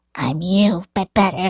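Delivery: put-on animatronic character voice. Voicing characters in a picture scene: Glitchtrap voice. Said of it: "do Springtrap voice and Glitchtrap voice".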